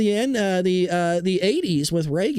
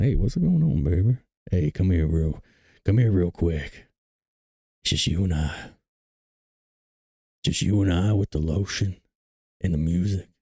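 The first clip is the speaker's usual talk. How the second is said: deep, very low, mock-seductive sexy voice. Asked about the sexy voice, the speaker puts it on: mock sexy voice. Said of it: "You like the sexy voice".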